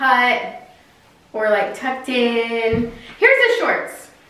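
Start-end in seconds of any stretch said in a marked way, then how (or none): 3.2-4.1 shrill, very high-pitched shouting. Going through outfits and introducing the next pair of shorts; yelling. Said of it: "I don't know why I'm yelling".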